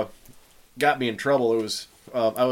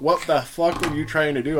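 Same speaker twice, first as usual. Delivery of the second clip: ordinary delivery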